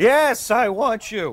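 very slow, loud, drawn-out shout. A father answers his child's call, shouting. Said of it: "you don't have to yell".

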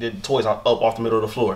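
ordinary talk, nothing marked

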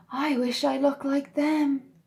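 sighing, high pitch. In the story, the ugly duckling speaks, sighing. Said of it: "he sighed".

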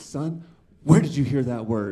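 stern, serious, all-business dad voice. Retelling confronting their seven-year-old son in a crowded Target, acting out being stern. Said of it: "got all stern".

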